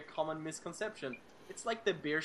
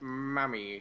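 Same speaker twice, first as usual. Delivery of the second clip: put-on 1940s movie gangster voice; 3 semitones lower, 4 dB louder than usual. Mocking another speaker's way of talking: imitating a 1940s movie gangster. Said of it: "you sound like one of those nineteen forties gangsters in a movie".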